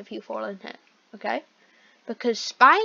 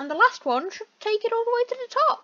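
squeaky, very high-pitched voice, rising, exclaiming; 12 semitones higher than usual. Stocking a feeder all the way to the top, in a high-pitched voice. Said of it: "Why did my voice just go so high-pitched?".

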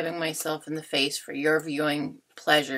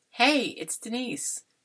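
forced, fake cheerful, falsely enthusiastic tone; 8 semitones higher than usual. Opening a recorded video greeting, fake enthusiasm. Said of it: "the totally false enthusiasm in my voice".

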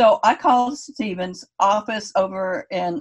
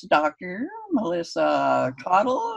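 read like a speech synthesizer. Retelling a phone call whose first words came in Stephen Hawking computer voice. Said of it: "that computer voice?".

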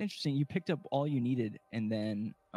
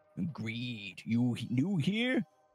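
eager, cheerful put-on creature voice, broken baby-talk. A sign-waver greets a newcomer in the game; eager cheerful mutant voice.

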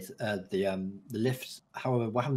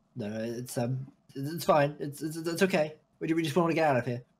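nervous, unconvincing, evasive tone, much higher pitch; 5 semitones higher than usual. In a role-playing game, creatures hiding in a cave are asked about rats; nervous, unconvincing denial.

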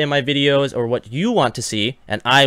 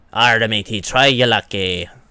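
pirate voice spoken with a Canadian accent; 3 semitones lower than usual. Opening a container in the game, speaking as a pirate: canadian pirate voice. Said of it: "that would be a Canadian pirate".

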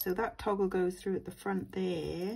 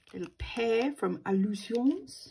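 fake upper-class French pronunciation; 3 semitones higher, 5 dB louder than usual. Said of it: "I'm just making that sound French and posh now".

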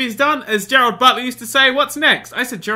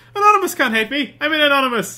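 put-on slight, half-there Irish accent; 3 semitones higher than usual. Quoting a remembered line back to the other speaker, almost an Irish accent. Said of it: "That was almost an Irish accent as well".

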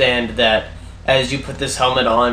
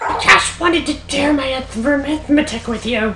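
very high little critter voice; 13 semitones higher than usual. Voicing a crab spider telling the players how much gold they get: crab spider voice. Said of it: "The crab spider is telling you how much gold you get".

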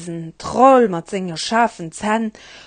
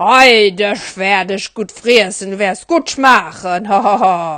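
mean, wicked bridge troll voice. Narrator telling the billy goats tale, voicing the troll at the bridge: mean troll voice. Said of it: "Me innert der Brücke hat der Besen allen Troll gelieft. He war grenger, beiser, voller Pelz, an den hat schrecklich scharf Zahn".

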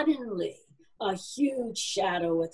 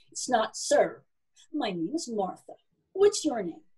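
ordinary delivery

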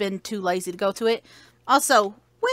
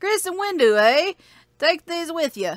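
put-on mock Canadian accent; 6 semitones higher than usual. Voicing a character after a Kentuckian objects to the accent, in a Canadian accent. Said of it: "Give him a Canadian accent".

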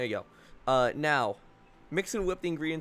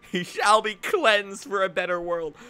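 declamatory cartoon anime villain voice; 5 semitones higher, 4 dB louder than usual. Joking around mid-conversation, the speaker talks like a Pokemon villain. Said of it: "Talking like a Pokemon villain right now".

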